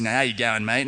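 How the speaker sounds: broad Australian accent. Australian speaker showing how they talk with the accent left in, broad Australian accent. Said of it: "if if we talk like this".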